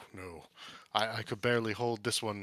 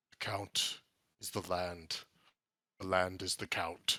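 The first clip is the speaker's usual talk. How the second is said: low, deep, horrid creature voice; 2 semitones lower than usual. Voicing a dog speaking to the players, deep, horrid voice. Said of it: "in that same sort of deep, horrid voice".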